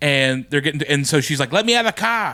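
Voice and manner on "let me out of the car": put-on Australian accent, pitched up high. Retelling a movie scene line by Nicole Kidman: Nicole Kidman Australian accent. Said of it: "the Australian accent comes out".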